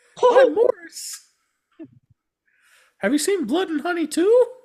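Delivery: squeaky, high, loud voice. Retelling a man's answer after he was nearly run over, in a Mickey Mouse voice. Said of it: "best Mickey Mouse voice".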